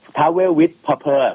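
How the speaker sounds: put-on proud, slow, careful English accent.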